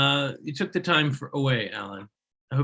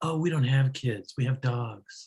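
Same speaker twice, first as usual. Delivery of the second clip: put-on smug, condescending tone, slower. Retelling what people say when asked if they have kids, in a mock-smug voice. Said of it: "that smug look ... with the yeah, yeah, yeah, yeah, yeah voice".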